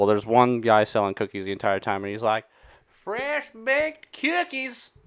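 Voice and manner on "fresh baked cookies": high-pitched Kentucky Southern twang. Retelling a Costco man selling cookies, in a Kentucky Southern twang. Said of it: "had like a Kentucky Southern twang".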